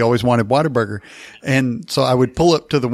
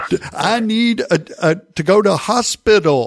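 slow, high, loud over-explaining tone. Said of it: "slower and faster and louder".

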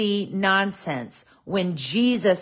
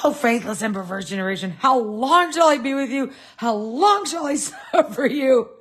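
put-on exasperated outburst, higher; 4 semitones higher than usual. Acting out Jesus's rebuke of a faithless generation: imitating Jesus blowing his top. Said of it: "Jesus just blew his top".

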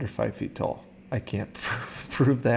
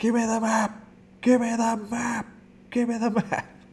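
very high yell, repeated over and over; 12 semitones higher than usual. Complaining about a movie's recycled audio, quoting a character: retelling a yell. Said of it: "Like when he yells".

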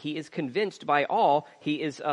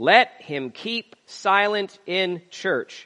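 slow, loud, heavily stressed emphatic delivery. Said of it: "very important line here".

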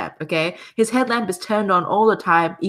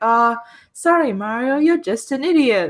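mock patronising, slow, condescending tone; 4 semitones higher than usual. Describing Toad's dialogue after losing a game level: mock-condescending Toad impression. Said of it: "makes it sound so condescending".

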